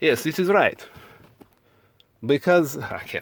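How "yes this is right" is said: clumsy, bad put-on Russian accent. Speaker role-playing Russia switches back to a Russian accent: bad Russian accent. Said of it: "now I'm going to go back to Russian".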